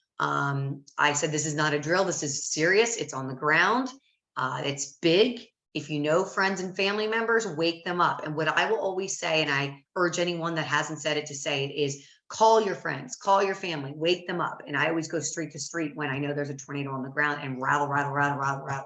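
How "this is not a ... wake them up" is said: usual speaking voice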